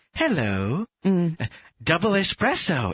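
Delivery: strange, weird, machine-like robotic voice. Retelling an announcement heard in the middle of an interview, in a weird robotic voice. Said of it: "this like weird robotic voice said".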